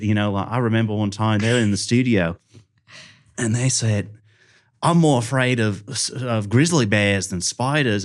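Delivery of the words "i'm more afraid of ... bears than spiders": put-on Australian accent for the whole line. Retelling what Australian podcast guests said in the studio: Australian accent. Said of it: "honed in on my Australian accent".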